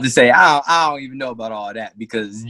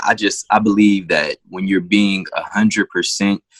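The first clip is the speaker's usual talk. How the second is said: ordinary talk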